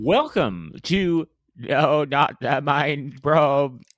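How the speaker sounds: put-on robotic voice like an old lady. Opening the podcast No Not the Mind Probe, attempting a Cyberman voice. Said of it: "I was trying to do a Cyberman, but it sounded like an old lady".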